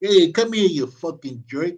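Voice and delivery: put-on New Yorker voice. Doing a favorite impression after a viewer praises the impressions: New Yorker impression. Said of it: "one of my favorites, The New Yorker".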